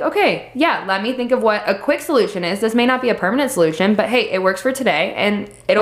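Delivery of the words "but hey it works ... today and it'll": ordinary talk, nothing marked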